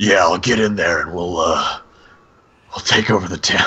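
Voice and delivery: gruff, weathered man voice. Retelling a scene, quoting what a man said: grizzled guy impression. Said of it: "he's so fucking grizzled".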